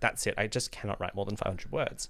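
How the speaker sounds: plain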